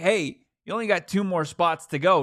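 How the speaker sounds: ordinary talk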